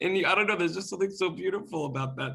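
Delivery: teary-eyed, tearful voice. Reacting to the other speaker's story of playing music together back home, teary-eyed. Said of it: "I'm getting teary-eyed".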